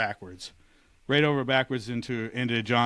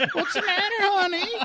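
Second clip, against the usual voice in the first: put-on very high-pitched elderly woman's voice. Retelling how a woman in bed asked what was wrong, in an old lady voice. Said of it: "I can't do Ryan's old lady voice".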